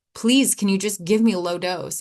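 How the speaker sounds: put-on pleading through sobs. Recounting a moment in someone's office, retelling a sobbing plea. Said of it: "I was sobbing, like bone racking sobbings".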